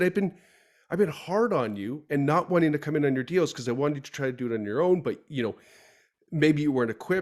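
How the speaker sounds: ordinary talk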